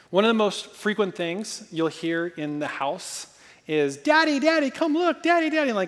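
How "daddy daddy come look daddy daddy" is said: put-on very high-pitched little-kid toddler voice, calling. Retelling a two-year-old running around the corner: imitating a two-year-old calling. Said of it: "this little two-year-old".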